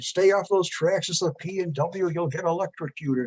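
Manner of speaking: put-on firm, stern scolding voice. Retelling a mother warning a kid by the tracks: imitating a mother yelling. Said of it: "my mother was yelling at him".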